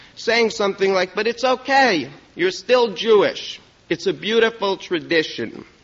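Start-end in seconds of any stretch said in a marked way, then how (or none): 1.2-5.7 phony put-on Yiddish accent. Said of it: "generally with a phony Yiddish accent".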